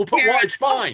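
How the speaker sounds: high-pitched, brave, forced calm. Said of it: "Bethany doing her very best to be like".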